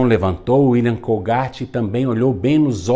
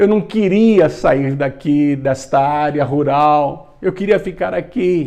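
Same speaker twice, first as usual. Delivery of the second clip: higher-pitched speech through put-on sobs; 4 semitones higher than usual. Retelling a young boy's words to an old man on the road: acting out sobbing while speaking. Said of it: "E o William contou, soluçando".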